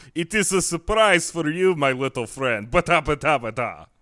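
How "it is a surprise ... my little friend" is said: put-on Russian accent, pitched up. Describing getting up from a somersault, the speaker slips into a put-on russian accent. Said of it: "makes you want to use this accent".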